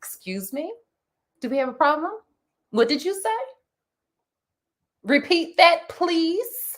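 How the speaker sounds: severe, no-nonsense, stern and confrontational tone. Speaker shows what she says when she wants to be left alone, in a stern voice. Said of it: "and then I tell them my stern voice".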